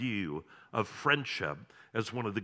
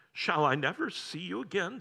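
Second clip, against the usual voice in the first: trembling, wavering, quavering, high voice; 9 semitones higher than usual. Narrator reading Caspian asking the doctor, quavering voice. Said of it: "Said Caspian in a quavering voice".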